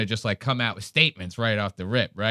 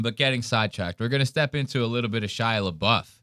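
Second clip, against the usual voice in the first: plain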